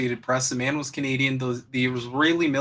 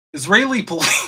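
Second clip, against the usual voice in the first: words breaking into laughter, louder and pitched up; 6 semitones higher, 6 dB louder than usual. Reading a news headline aloud to the audience, laughing while speaking. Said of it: "I can't even say it without laughing".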